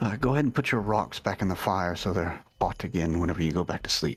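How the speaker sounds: speaking in a whisper. Speaker talks to a companion taking the next watch, not wanting to wake anyone: whispering. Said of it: "I'm kind of whispering because I don't want to wake anyone up".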